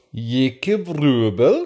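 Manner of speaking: put-on, high-pitched Scandinavian accent. Listing people to thank, saying the last name in a put-on Scandinavian accent. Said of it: "Has our guest ever heard a better Scandinavian pronunciation than that?".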